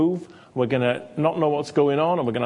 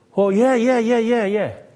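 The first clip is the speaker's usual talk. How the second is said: dismissive, high, raised string of yeahs; 8 semitones higher, 5 dB louder than usual. Retelling praying for a man, the speaker acts out his replies: impersonating the man prayed for. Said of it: "That's a very accurate impersonation".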